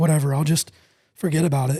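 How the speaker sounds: plain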